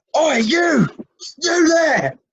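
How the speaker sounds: very high-pitched guard voice calling out. Narrating a game scene after a whistle blows, the narrator voices a town guard calling out. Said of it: "Sound of town guard".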